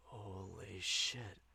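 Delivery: low, hushed half-whisper under the breath. A narrator reads Dev's reaction to a threat in a half-whisper. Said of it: "Dev's voice drops to a whisper".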